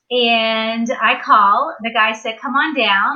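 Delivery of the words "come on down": ordinary delivery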